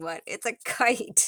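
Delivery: slow, words broken up by laughter. Showing a doll accessory, caught by surprise: laughing while talking. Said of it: "I'm sorry, I'm laughing".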